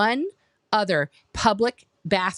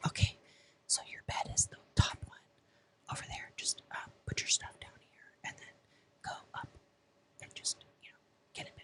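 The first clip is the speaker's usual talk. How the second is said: hushed, barely voiced whisper. Retelling what staff said in a dark room at night: imitating someone whispering. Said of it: "they're whispering now".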